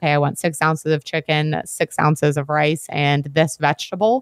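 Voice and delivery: ordinary talk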